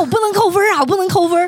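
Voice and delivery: high, strained, anxious voice. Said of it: "你就看他脸都快要憋红了".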